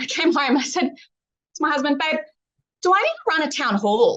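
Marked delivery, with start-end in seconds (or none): 2.0-4.2 put-on breezy, offhand, flippant tone with swooping pitch. Recounting what she asked her husband after brunch, retelling a flippant question. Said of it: "very flippantly".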